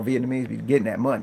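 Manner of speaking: usual speaking voice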